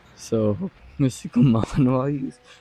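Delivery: giggly, excited talking, laughing through the words. Video host trying to say someone's username correctly, laughing while talking. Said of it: "I'm sorry I'm laughing, I'm just really excited".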